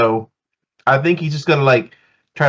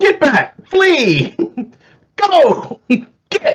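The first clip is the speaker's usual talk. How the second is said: very high, shouted yells; 13 semitones higher than usual. A player's character tries to scare off a creature, yelling to scare it off. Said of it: "you're just yelling at it and waving everything".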